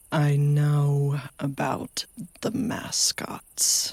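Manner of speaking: "know" drawn out in a creature voice. Speaking to Bobby, voicing the Wampus Cat mascot in a Wampus Cat voice. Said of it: "just hear the Wampus Cat's voice go".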